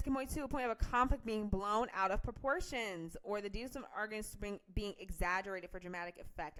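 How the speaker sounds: ordinary delivery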